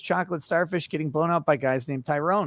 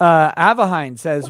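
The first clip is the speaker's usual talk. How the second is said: ordinary talk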